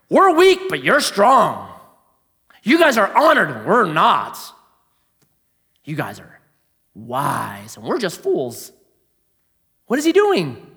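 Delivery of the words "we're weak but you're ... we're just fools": put-on sarcastic, mock-praising tone. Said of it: "This is called sarcasm".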